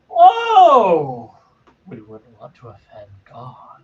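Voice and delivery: self-satisfied, knowing, whoa drawn out and swooping. Voicing a character who mocks a player's talk of god: smug. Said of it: "got this real smug look just comes on".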